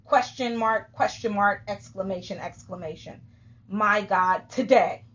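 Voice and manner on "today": today stressed loudly, as if in all caps. Reading a friend's post aloud: reading today in all caps. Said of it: "Today means that that was all cap".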